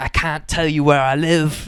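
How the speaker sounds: put-on British accent. Retelling what a video maker said, imitating him in a British accent. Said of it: "This is my British accent".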